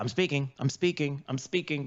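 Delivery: ordinary talk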